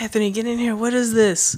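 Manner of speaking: high-pitched screaming call. Retelling a mother finding images on the computer: imitating mom screaming. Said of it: "starts screaming".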